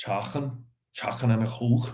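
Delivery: put-on Liverpool Scouse accent. Listing what friends want from Costco: put-on Scouse accent. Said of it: "That's my Scouse accent".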